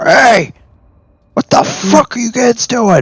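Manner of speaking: very high, loud, shouted yell. Game master voicing someone calling out to the kids from the west, loud voice. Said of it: "a loud voice go".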